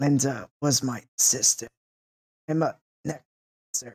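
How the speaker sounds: very quiet, soft, kept small. Game master voicing a character answering the party, very quietly. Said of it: "he says very quietly".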